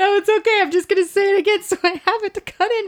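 talking through laughter. Explaining a retake after being corrected, laughing while talking. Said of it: "now I'm laughing too hard".

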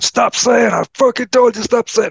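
mock shrill, pitched very high, screaming rant. Retelling a story of Gary Busey in a coffee shop, imitating Gary Busey screaming. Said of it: "he starts screaming at your man".

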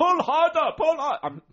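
put-on German accent. Describing a documentary, the speaker voices Christo ordering iron workers, in a German accent. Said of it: "I'm doing a German accent".

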